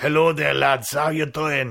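loud, bad French accent. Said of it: "me trying to do a French accent really badly".

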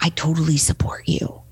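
soft, unvoiced, supportive hushed whisper. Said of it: "They're whispering to me".

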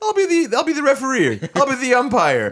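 keen, eager voice.

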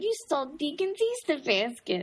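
put-on New York accent. Retelling what he said when he went into a new york accent. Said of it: "But then he goes into like a New York accent, like".

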